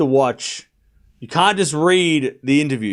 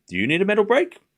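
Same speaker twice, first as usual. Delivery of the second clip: playful, lighthearted teasing with raised pitch; 6 semitones higher than usual. Retelling what she said at a press conference: imitating light teasing. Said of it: "lightheartedly, like, just teasing".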